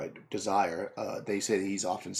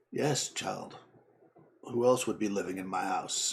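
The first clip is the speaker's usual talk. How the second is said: put-on old crocodile character voice. Voicing an old crocodile who greets a visitor: old crocodile character voice. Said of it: "he raises his face... And he says".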